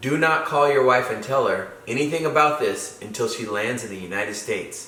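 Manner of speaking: ordinary talk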